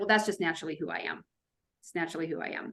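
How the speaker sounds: rattled off fast and soft, defensive brush-off tone.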